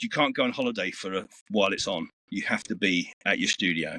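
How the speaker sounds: ordinary talk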